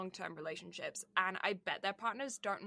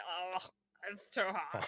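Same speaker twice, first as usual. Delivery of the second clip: put-on sweltering, hot-and-sweaty voice, slow. Teasing the other speaker for sounding hot and sweaty, imitating a hot, sweaty voice. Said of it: "why do you sound like you're just like hot and sweaty".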